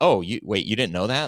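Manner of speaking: plain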